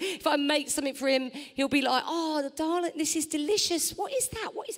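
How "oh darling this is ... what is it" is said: acted, condescending, patronising, pitched-up talking-down voice. Imitating a partner reacting to something made for him: patronising. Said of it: "He's so patronising".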